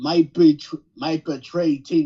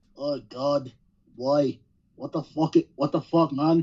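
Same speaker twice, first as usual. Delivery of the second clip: slow, drawling, bad Irish accent. Imagining another wrestler's shocked reaction: bad Irish accent as Finn. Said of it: "that was not Irish".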